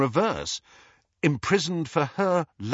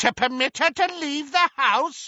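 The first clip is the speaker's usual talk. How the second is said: very high, scornful, mocking cackling; 12 semitones higher, 3 dB louder than usual. Narrating a story, a woman cuts off another speaker, cackling. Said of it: "cackled Muriel".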